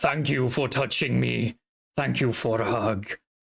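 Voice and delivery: low gravelly voice. Voicing a creature that speaks after a hug: much lower pitch, gravelly tone. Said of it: "changes to a much lower pitch with a bit of a".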